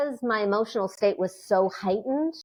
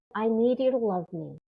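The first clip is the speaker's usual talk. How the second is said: put-on vulnerable, pleading voice. Retelling what money said when asked what it needed: imitating a vulnerable plea. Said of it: "he said it with, like, such vulnerability".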